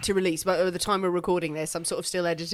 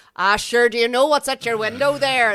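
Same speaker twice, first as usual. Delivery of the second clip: full-on, broad Northern Irish Belfast accent, raised; 4 semitones higher, 8 dB louder than usual. An actor shows the accent he uses for the Belfast bishops he plays, Belfast accent. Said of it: "When you do a Belfast accent for a bishop".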